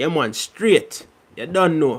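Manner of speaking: straight, unexaggerated Jamaican patois accent. Having promised subscribers a Jamaican accent, the speaker gives a sample: Jamaican accent, patois. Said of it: "That's just a little sample".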